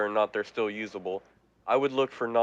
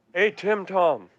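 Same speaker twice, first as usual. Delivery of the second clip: pitched-up yell, calling out; 9 semitones higher, 4 dB louder than usual. In character, calling up through an access hatch: yelling up through a hatch. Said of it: "I'm gonna yell up through the access hatch".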